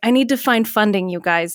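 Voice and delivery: plain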